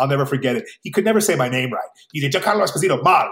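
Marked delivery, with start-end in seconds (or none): 2.3-3.3 very fast, rattled off, syllables run together. Retelling how a childhood buddy said the speaker's name, really fast. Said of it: "He would say it really fast".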